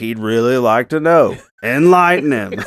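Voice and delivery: loud, sharp yelling. Speaker recapping a scene where one character yells at another, retelling a yell. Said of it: "he yells at Otis".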